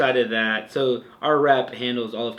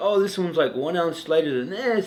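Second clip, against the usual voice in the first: relaxed, chilled-out, laid-back hippie voice; 5 semitones higher than usual. Retelling a man showing off hiking poles, in a hippie voice. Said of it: "that's my hippie voice".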